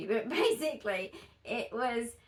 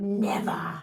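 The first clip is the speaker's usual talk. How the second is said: put-on dark villain voice, lower and louder; 5 semitones lower, 5 dB louder than usual. Retelling answering mum about marriage and kids: Voldemort-like voice. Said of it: "Why does that sound like the voice of Voldemort".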